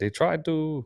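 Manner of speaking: bad put-on French accent. Quoting a foreign guy's reply, terrible fake French accent. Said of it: "That's a terrible accent".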